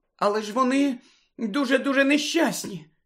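anxious, alarmed, high-pitched sudden cut-in. Narrator reads Parvati cutting Hagrid off, alarmed interruption. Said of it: "стривожено урвала його Парваті".

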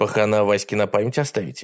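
plain reading voice

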